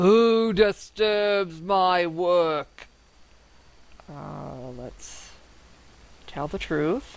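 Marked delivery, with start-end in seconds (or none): 0.0-2.9 slow, thunderous voice like rolling distant thunder. Narrating a scene, a giant shadowy figure demands an answer, voice like distant thunder. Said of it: "Its voice sounds like distant thunder as it demands".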